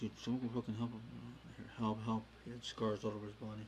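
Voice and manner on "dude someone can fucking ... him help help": normal talking voice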